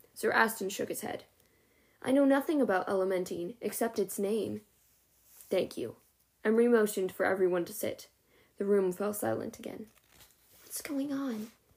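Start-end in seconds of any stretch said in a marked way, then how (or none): 10.7-11.5 quiet, hushed, high-pitched half-whisper. A girl speaks to a boy while the room falls silent; half-whispered. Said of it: "Sophie whispered to Alden".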